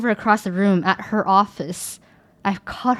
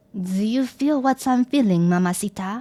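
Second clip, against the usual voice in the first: spoken with French accent. Suggesting a line to say to a crush, in a french accent. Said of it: "say in French accent".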